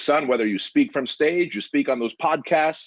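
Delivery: put-on Russian accent, Armenian flavor. Quoting dad's advice about entering the country legally: imitating a heavy Armenian Russian accent. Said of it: "he's got a heavy, uh, Armenian Russian accent".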